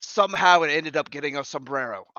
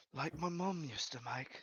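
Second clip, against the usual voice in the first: very quiet, hushed, barely audible half-whisper; 17 dB quieter than usual. Playing a character who puts out two silver for porridge: half-whispering. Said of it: "I just whisper".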